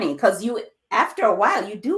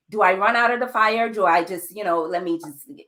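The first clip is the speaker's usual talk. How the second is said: normal talking voice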